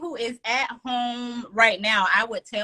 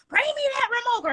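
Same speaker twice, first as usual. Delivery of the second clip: very high, hollered yell; 13 semitones higher than usual. Retelling how mom used to call for the remote: imitating mom yelling. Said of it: "our mom used to have to yell".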